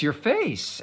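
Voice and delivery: stunned, surprised, high-pitched shocked outburst. Retelling the mother's reaction on seeing the face: imitating a shocked voice. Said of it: "said in a shocked voice".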